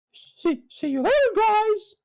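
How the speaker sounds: squeaked out, high and loud. Saying goodbye at the end of today's episode, in a Mickey Mouse impression. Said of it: "I'm going to do my Mickey Mouse impression".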